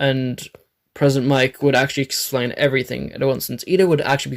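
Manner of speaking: ordinary delivery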